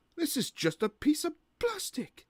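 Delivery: very high soprano joke voice. Retrying a failed voice joke about plastic, the speaker uses a high-pitched joke voice. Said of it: "I'll try that again".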